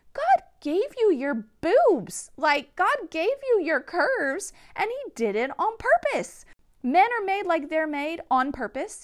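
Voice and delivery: loud, high passionate shout. Speaking to women about what the church made them feel: shouting. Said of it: "Sorry, I'm shouting".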